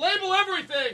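play-acted thrilled shout, pitched way up. Retelling his answer when a man offered to label more things: retelling an excited yell. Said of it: "I'm not yelling in a mean way".

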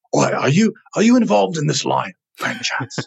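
put-on grumpy old British man voice. Retelling what a stranger asked at the unveiling: curmudgeonly old British man voice. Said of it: "this, like, curmudgeonly old British man comes to me and goes".

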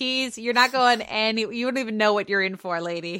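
ordinary talk, nothing marked

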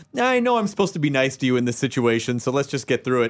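ordinary talk, nothing marked

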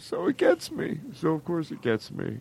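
crying while talking. Talking about a poster that mattered, crying while talking. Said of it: "I'm not sorry that I'm crying".

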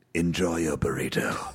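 dropped, very low talking-car voice. Saying the podcast sign-off as the talking car: KITT voice. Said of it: "Would you say it as Kit?".

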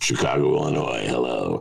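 very deep, rough, raspy call-in host voice. Imitating a talk show host taking a call: Larry King impression. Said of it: "Your Larry King impression".

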